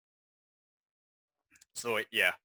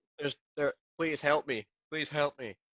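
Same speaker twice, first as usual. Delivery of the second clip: ordinary talk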